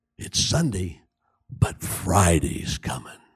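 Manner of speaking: very low, venomous, poisonous whisper. Speaker imagines Satan whispering in their ears: imitating Satan's venomous whisper. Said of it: "Satan whispering in their ears with his venomous, sulfuric-scented voice".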